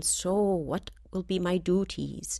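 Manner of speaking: put-on slight, soft, light Jamaican accent. Retell what the woman holding your baby turned and said to you, in a sort of jamaican accent. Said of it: "said in her sort of Jamaican accent".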